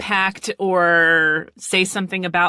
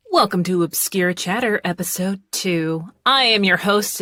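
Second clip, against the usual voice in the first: put-on radio-host whisper. Host opening episode two of the show, fake whisper like an NPR presenter. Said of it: "doing this like fake whisper thing".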